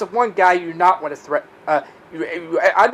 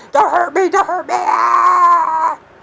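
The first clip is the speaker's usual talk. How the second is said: play-acted, shrill, very high, very slow drawn-out begging scream; 11 semitones higher, 3 dB louder than usual. Taunting someone, acting out them screaming for mercy. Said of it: "You screaming, begging for mercy".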